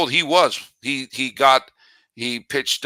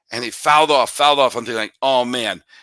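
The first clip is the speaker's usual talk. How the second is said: plain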